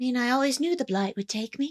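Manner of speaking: put-on high, eerie, creepy old-fashioned child voice. Voicing a plague-sick child in a game: creepy Victorian child voice. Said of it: "creepy Victorian child".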